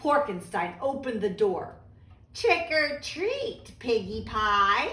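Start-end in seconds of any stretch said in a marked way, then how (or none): 2.3-4.9 put-on drawn-out, slow, creaky old lady voice. Narrating the wolf at Porkenstein's door greeting the pig: creaky old lady voice. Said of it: "the wolf said in a creaky old lady voice".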